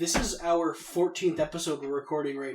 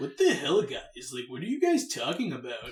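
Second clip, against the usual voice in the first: put-on voice, slow, drawn out, swooping up and down; 2 semitones lower than usual. Doing an impression of Matt reacting to the others: imitating Matt. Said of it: "this is my impression of Matt".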